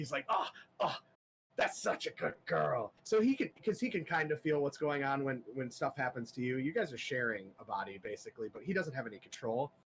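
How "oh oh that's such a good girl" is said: overjoyed, thrilled, ecstatic, gushing delight. Voicing a voice in a player's head praising a spider: ecstatic. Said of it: "this is just going ecstatic".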